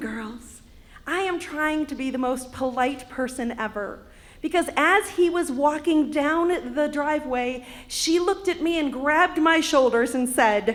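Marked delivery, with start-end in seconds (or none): none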